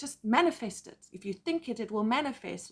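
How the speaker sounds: plain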